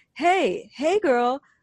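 put-on man's voice, high screaming holler. Retelling a man catcalling from his truck window: imitating a man screaming. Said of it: "like, screaming out his window".

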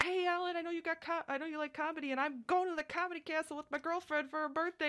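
eager, excited, very high-pitched chatter. Retelling what a guy came up and told them: imitating an excited guy. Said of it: "He was, like, so excited to tell me".

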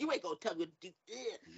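sassy, bratty, defiant tone. Retelling a reply during an interview: imitating own sassy retort. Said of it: "I'm being all, like, sassy".

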